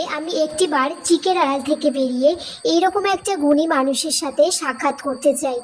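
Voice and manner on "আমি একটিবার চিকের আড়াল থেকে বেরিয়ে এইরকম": plain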